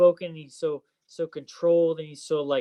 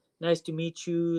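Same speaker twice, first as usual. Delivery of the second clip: put-on, soft-spoken, gentle voice; 3 dB quieter than usual. Imitating a mentor greeting someone on meeting: imitating soft-spoken Martin. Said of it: "he's soft-spoken".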